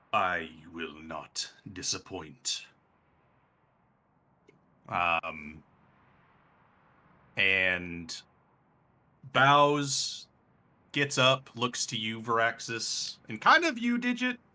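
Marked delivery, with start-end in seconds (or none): 0.1-2.6 low, slow, quiet, ancient dragon voice. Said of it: "you hear this dragon go".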